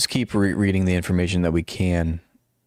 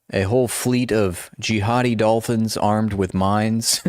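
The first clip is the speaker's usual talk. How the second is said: usual speaking voice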